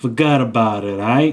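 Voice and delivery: put-on old-school Italian mobster accent. Joking that someone talks like an old Italian mafia member, old Italian mafia accent. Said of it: "He's like an old Italian mafia member".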